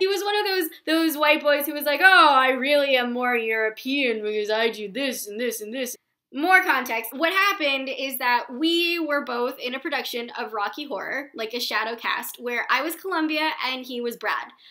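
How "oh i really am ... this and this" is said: mock level, dry, would-be clever deadpan delivery. Imitating a pretentious ex-boyfriend: imitating a guy's deadpan delivery. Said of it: "he was attempting to deadpan every single sentence".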